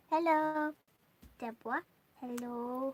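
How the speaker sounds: goofy put-on voice, very loud. Greeting listeners who sent hellos, in her silly voice. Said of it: "That's her silly voice".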